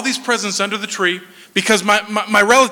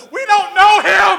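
acted, very high, screamed-out blurt; 11 semitones higher, 3 dB louder than usual. Retelling what the speaker's older brother yelled out, imitating Sam screaming out. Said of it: "my older brother Sam screams out".

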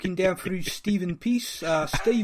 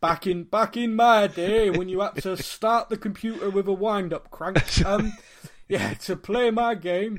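put-on Yorkshire dialect accent. Teased about showing their age, the speaker answers in a yorkshire accent. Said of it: "I heard a Bristolian doing a Yorkshire accent".

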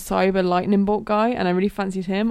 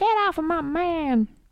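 very high, slow, stretched-out jealous delivery; 9 semitones higher than usual. Describing jealous Velma in the Scooby-Doo remake: imitating Velma's jealous voice. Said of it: "in that voice".

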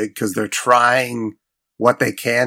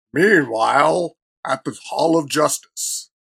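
dramatic put-on cartoon announcer voice; 4 semitones higher than usual. In a chat about a movie, doing the old Justice League voiceover guy. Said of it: "that old Justice League voiceover guy".

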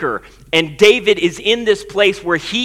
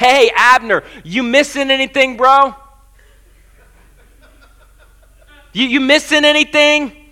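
high, hollering, shouted call; 5 semitones higher, 4 dB louder than usual. Retelling David yelling down to Abner from the hill: imitating a yell. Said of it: "he yells down to Abner".

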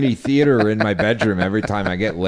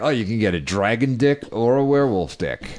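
ordinary talk, nothing marked

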